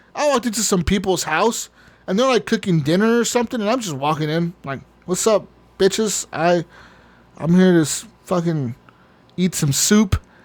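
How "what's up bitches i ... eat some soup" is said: slow, unhurried, tough put-on gangsta street voice. Retelling walking into people's house in a game: imitating a gangsta. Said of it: "you're straight gangsta Pokemon".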